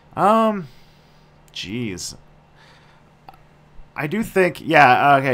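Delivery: under-the-weather, sick-sounding voice. Guest with a cold starting to answer a question about space colonies: sick voice. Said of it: "you sound sick".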